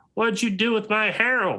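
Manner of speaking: put-on shrill, very high, irate old-woman cry. Game master voices an old lady crying out at the players, angry old woman voice. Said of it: "you hear the voice of an angry old woman".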